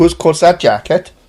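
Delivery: bad put-on Welsh accent with swallowed vowels. Answering a request for a best welsh impression, in a welsh impression. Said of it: "Do your best Welsh impression".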